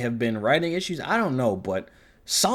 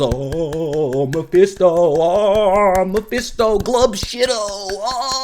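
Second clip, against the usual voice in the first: very slow, high, drawn-out, dazzled awestruck gasps; 7 semitones higher, 7 dB louder than usual. Critic mocks the fans a show's reveal scene was made for, mocking awestruck fan gasps. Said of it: "the soy face fucking like clapping seals".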